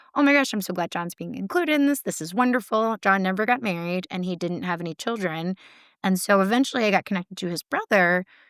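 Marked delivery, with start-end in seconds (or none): 0.1-2.9 put-on thrilled, excited, gushing, overflowing delight. Retelling what a sister-in-law said on hearing the news: imitating someone excited. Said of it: "his sister-in-law was so excited".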